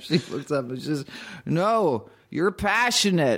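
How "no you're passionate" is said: insistent, pressing, firmer, pitched-up delivery. Telling a joke, a woman repeats herself to a man, a little more insistent. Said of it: "A little more insistent this time".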